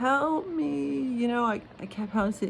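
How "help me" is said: put-on crying, pleading, much higher pitch. Recounting hearing someone outside, imitating someone crying for help. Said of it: "He was like crying".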